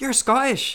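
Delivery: very high, thrilled, eager, excited blurt. Retelling a traveller who overheard and came over: imitating an excited girl. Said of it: "she was really excited".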